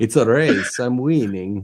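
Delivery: very slow comic voice, every word dragged out. Imitating another speaker's boast about the race: Mister Bean voice. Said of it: "You sound like Mister Bean".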